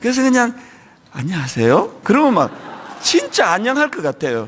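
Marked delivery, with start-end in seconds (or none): 1.1-2.0 light, tender, gentle Seoul accent. Gyeongsang speaker recalling sermons he envied: gentle seoul accent. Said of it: "나긋나긋한 서울 말씨로".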